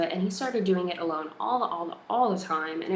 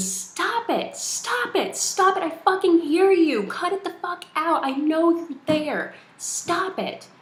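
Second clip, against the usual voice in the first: shrill, very high, loud shrieking scream; 10 semitones higher, 6 dB louder than usual. Retelling sitting up in bed at night yelling at banging walls: retelling own screaming. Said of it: "I started screaming".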